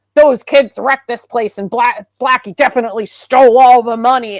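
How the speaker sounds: mock furious, loud, angry rant in irate man's voice. Retelling what an angry character said about the kids: imitating an angry man. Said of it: "he is, like, so angry".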